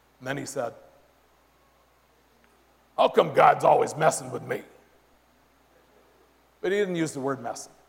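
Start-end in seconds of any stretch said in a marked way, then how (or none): 3.0-4.6 put-on gravelly male voice. Retelling a man's news of his cancer, quoting his question: imitating Greg's gravelly voice. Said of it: "he has this real, real gravelly voice".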